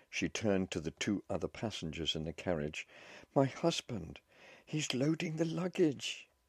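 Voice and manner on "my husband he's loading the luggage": frantic, panicked, very high-pitched alarm. As the train starts moving, a woman turns to fellow passengers, in panic. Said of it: "In panic".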